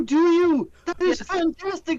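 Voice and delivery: mock elderly nanny voice. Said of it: "doing his best Missus Doubtfire impression".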